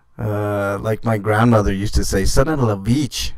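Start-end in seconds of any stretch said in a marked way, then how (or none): 2.3-3.4 put-on heavy, thick French accent. Quoting a grandmother's saying after hitting the wrong buttons, heavy french accent. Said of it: "had a very uh, heavy French accent".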